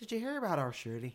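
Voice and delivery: soft put-on Northern Irish accent. Among people trying out accents, the speaker attempts a Northern Irish accent. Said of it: "What about a Northern Ireland accent?".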